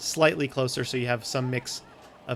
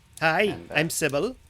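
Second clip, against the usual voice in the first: put-on woman's voice; 4 semitones higher than usual. Voicing someone greeting the party from the tavern bar: female voice. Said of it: "greeted by a female voice from the bar saying".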